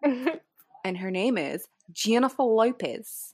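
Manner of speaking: put-on Australian accent, pushed back in the throat. Showing how to get all aussie from the back of the throat, aussie accent. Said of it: "if you want to get all Aussie with it".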